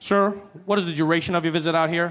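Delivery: put-on officer voice, rapid-fire, rattled-off delivery. Retelling how the officer at the passport desk rattled off questions: imitating an officer rattling off questions. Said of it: "he starts rattling them off".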